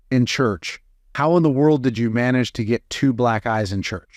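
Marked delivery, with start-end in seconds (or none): none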